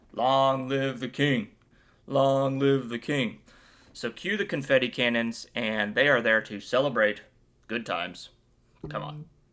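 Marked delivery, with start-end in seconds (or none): 0.2-3.4 slow, drawn-out shouted crowd-style cheer. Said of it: "everyone started shouting".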